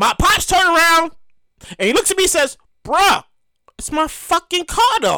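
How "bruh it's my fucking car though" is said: put-on deadpan, dead serious, unbothered, matter-of-fact. Retelling a dad's reply in the car: imitating a deadpan reply. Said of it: "in a deadpan response".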